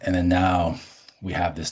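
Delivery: plain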